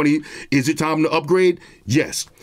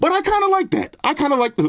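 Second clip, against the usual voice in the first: voice suddenly jumps up very high; 11 semitones higher than usual. Talking about the Galaxy S22 and S23 design, voice suddenly goes high. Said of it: "why did my voice get mad high just now?".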